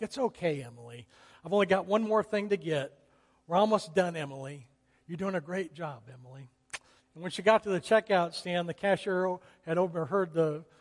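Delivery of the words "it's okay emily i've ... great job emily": put-on soothing, calming, reassuring, encouraging voice. Retelling a mother calming her crying daughter in a store: imitating a soothing voice. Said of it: "with a soothing voice".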